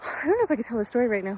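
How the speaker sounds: fast, breathless, winded, out-of-breath speech. A vlogger talks to viewers at elevation near a falls, out of breath. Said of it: "I'm like out of breath".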